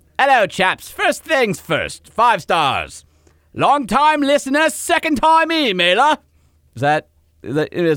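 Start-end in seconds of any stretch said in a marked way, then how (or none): 0.2-6.2 put-on British accent, much higher. Co-host tries it on request, reading a listener email in a British accent. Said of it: "do I have to say it in a British accent?".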